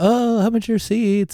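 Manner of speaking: bright, bubbly voice. Retelling a stranger asking about seat prices: imitating an upbeat guy. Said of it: "really upbeat".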